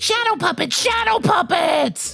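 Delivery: shrill, squeaky little monster voice, pitched very high. Narrator reads the orange monster Morgan's answer, in a squeaky monster voice. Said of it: "She squeaked again".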